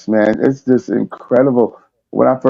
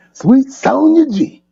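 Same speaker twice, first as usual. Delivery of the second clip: Southern man's accent, pitched very high. Showing how to say the chat member's name: southern man accent. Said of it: "You gotta say it like a Southern man".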